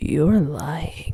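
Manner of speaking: low, sultry, seductive, close-up voice. Narrator reads Adam leaning close to the listener's ear: low, seductive voice. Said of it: "in a low, seductive voice".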